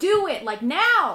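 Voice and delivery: very loud, high-pitched, slow, drawn-out screaming. Describing a woman urging you to use the stone, acting out a scream. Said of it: "She's like screaming at you".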